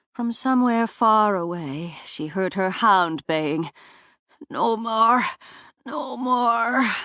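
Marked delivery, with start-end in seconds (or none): 4.5-6.9 harsh, feeble, weak croak, very slow, very drawn out. Narrator reading Sorka's exhausted cry as her pain fades, croaking, harsh and weak. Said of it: "Sorka's voice croaked out, harsh and weak".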